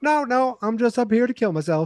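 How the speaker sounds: put-on offhand, breezy tone, very high. Retelling a cartoon scene on a roof: imitating Bill, nonchalant. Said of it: "he says it so nonchalant".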